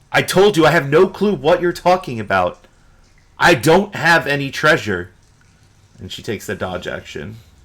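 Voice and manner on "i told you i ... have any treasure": shouting back, voice raised. Voicing a character yelling back to the lead cultist: yelling back. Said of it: "she yells back to the lead cultist".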